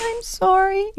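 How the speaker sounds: tiny, very high, pitiful little voice. Describing a pet bird after being scolded, imitating its pathetic little voice. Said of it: "in this pathetic little voice".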